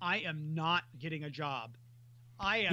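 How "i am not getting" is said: ordinary delivery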